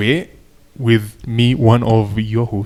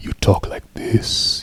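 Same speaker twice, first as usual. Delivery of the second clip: low, deep put-on voice. Explaining how to do a deep voice, demonstrating a deep voice. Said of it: "if you want to do a deep voice".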